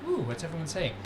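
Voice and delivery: ordinary talk, nothing marked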